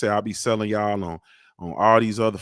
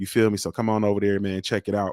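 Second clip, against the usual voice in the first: normal talking voice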